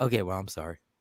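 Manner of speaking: mock sorry, sarcastic, insincere tone. Retelling how someone said sorry to her: mock-sarcastic apology. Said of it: "you said it sarcastically".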